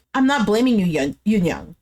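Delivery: ordinary delivery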